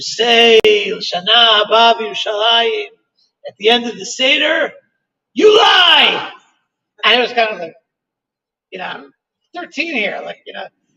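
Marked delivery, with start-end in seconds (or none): 0.0-6.3 thick put-on Israeli accent, slow. Recalling an Israeli emissary addressing thirteen-year-olds; heavy Israeli accent. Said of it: "in a heavy Israeli accent".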